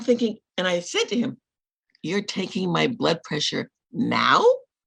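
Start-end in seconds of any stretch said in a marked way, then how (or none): 2.0-4.4 furious, angry-sounding voice. Retelling a complaint to a doctor's assistant: retelling own furious remark. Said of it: "And I'm steaming".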